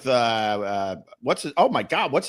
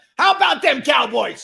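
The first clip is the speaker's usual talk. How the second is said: very high, rough coach voice; 11 semitones higher, 4 dB louder than usual. Imitating a Dallas Cowboys coach: Jimmy Johnson impression. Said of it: "Who's that?".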